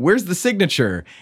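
mock teasing, high, jokey tone. Retelling what a man asked while she signed her book, retelling a joking question. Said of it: "in a joking way".

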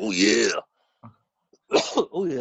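put-on gravelly wrestler growl. Joking that the character sounds like Macho Man Randy Savage. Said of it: "Voiced by Macho Man Randy Savage".

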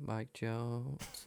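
very soft, hushed mutter under the breath. Retelling a player in a press clip: imitating a mutter under the breath. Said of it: "under his breath. He's like".

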